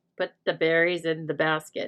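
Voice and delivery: ordinary talk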